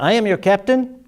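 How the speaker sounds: fake German accent, pitched way up. Retelling a man suddenly addressing fifty people on a boat, German accent. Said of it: "he was talking in a French, in a uh, German accent".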